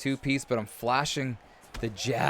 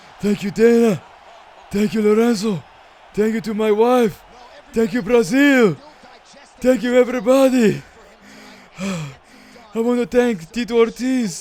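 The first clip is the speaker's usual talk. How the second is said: bad, very loud, shrill, very high yelling; 10 semitones higher, 12 dB louder than usual. Imitating the winning fighter's thank-yous after the fight: terrible impression of winning fighter. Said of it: "That's a terrible impression".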